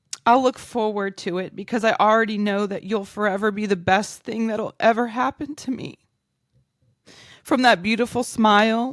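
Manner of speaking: overcome with emotion. Giving a loving speech to someone close, getting emotional. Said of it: "woo, okay, sorry".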